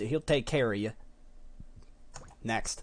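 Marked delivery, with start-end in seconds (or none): 0.0-0.9 Texan accent with the word "of" swallowed. Talking in Texas accents, showing the line without the word of, Texan accent. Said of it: "They don't have an of in Texas. It's just".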